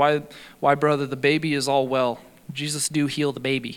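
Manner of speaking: ordinary talk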